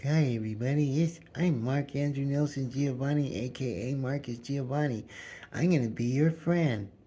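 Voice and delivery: put-on meek little-lamb manner. Retelling going into relationships, imitating own little baby lamb self. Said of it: "a little baby lamb".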